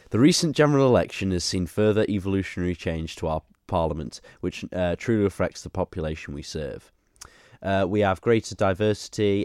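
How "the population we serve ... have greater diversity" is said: ordinary talk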